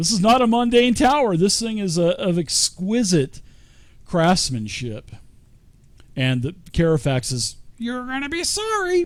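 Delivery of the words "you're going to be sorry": very high, squawky, squawking parrot voice. Trying to voice a parrot's line, in a parrot voice. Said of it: "I'm trying to do my best parrot voice".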